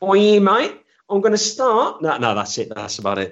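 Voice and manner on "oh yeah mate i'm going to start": put-on very high-pitched Australian accent. Retelling what he said when he turned up one morning: imitating an australian accent. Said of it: "I can't do an Aussie accent".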